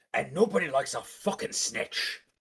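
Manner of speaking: obvious put-on pirate voice. Speaking in a role-play scene to back him up, obvious pirate voice. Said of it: "I say in obvious pirate voice".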